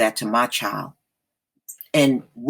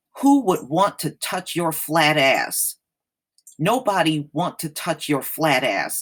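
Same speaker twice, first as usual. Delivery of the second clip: normal talking voice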